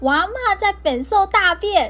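mock slow, high, drawn-out hollering shout. Retelling pretending at home, acting out shouting toward the house door. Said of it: "大喊说".

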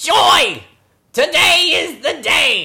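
high, drawn-out, slow pigeon voice. Reading the pigeon's lines aloud from a picture book: Gilbert Gottfried voice. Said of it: "My pigeon sounds like, uh, Gilbert Gottfried".

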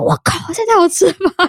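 high, amazed exclamation, acted out in astonishment. Recalling eating street food in Tainan, retelling an amazed exclamation. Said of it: "我自己有惊呼".

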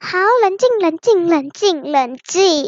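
plain reading voice

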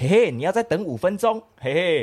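high, giggly, laughing, teasing joking tone. Retelling own joking reply at McDonald's: retelling a giggly joking reply. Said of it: "我就笑着他说".

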